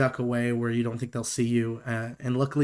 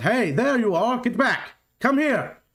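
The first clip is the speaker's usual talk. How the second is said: yelling out, pitched very high; 11 semitones higher, 4 dB louder than usual. Voicing one of three approaching men calling to a player's character: yelling out. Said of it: "And he yells out".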